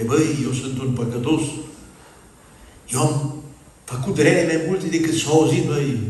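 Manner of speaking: ordinary delivery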